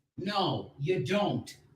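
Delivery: shouting. Arguing with another speaker who just said something: yelling. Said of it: "Why are you yelling at me?".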